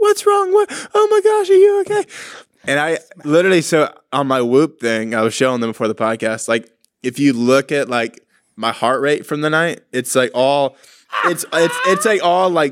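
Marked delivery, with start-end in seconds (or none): 0.0-2.0 put-on, very high, frantic, panicked freak-out. Retelling a night of screaming, imitating Sadie freaking out. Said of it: "So Sadie's like freaking out".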